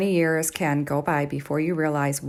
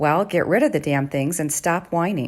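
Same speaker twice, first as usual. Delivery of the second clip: ordinary talk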